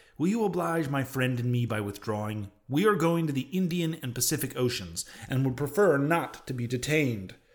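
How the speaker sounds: ordinary delivery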